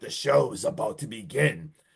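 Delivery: low, slow, evil demonic horror-clown voice. Retelling a scene, voicing a character who looks at another: demonic clown voice. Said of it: "looks at him in like a demonic clown voice".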